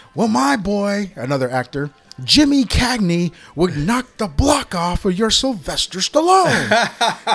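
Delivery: put-on old sea dog voice. Retelling a movie scene where an old sailor argues: imitating an old sailor's talk. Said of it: "he talks like a sailor".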